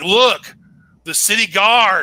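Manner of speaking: loud, almost yelling. Voicing a character warning about the city guard: loud, almost yelling. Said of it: "he is talking really, really loudly".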